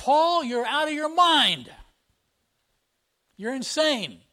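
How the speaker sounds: mock intense, high, loud yelled outburst. Retelling how one man interrupted another's defense, retelling a yell. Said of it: "he said in a loud voice, he yelled out".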